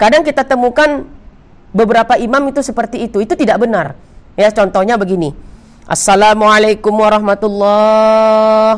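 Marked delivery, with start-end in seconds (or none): 5.8-8.8 clear, strong, firm, fully voiced delivery. Showing how an imam's first salam in prayer is said: loud, strong first salam. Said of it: "Salam pertama kuat".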